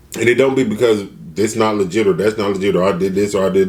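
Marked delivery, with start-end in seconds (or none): none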